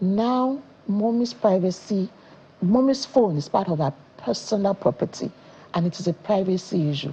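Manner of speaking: ordinary talk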